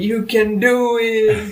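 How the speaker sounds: very slow, high cheering scream, every word dragged out. Describing a movie cameo, the speaker reenacts Rob Schneider screaming encouragement. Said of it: "and he's screaming".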